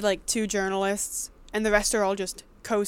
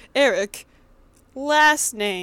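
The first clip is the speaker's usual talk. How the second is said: fake text-to-speech robot voice, louder; 7 dB louder than usual. Joking that a name gets added later: mock robot voice. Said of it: "a robot voice come on".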